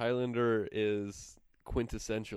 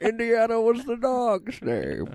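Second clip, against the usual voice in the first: booming, high-pitched, slow, drawn-out delivery; 13 semitones higher, 11 dB louder than usual. Quoting a movie line in a Sean Connery impression. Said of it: "Connery impression".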